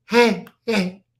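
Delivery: loud, barking, dog-like delivery. Retelling how she picked the glasses up and barked, imitating Chris barking. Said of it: "Just like it was a bark".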